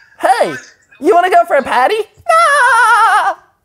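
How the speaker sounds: very high cartoon voice with long drawn-out ah. Doing a voice while others listen and laugh: SpongeBob voice.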